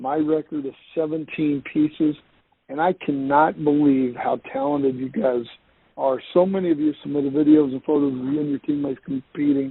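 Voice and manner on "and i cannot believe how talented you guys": plain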